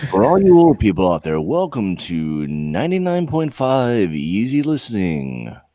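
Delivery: deep, low late-night radio DJ voice. Doing a radio station intro in a deep late-night radio voice. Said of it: "one of those like deep voices, it's always like the um the the the two a m radio station".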